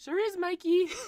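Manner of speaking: put-on very high, loud girl voice, belted out. Asked to redo Macy's reply in the story: girl voice as Macy. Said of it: "Do your girl voice, dude".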